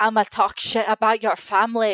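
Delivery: put-on Glaswegian accent. Retelling what roman's opponent said, the speaker uses a glaswegian accent. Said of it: "That's my Glaswegian accent".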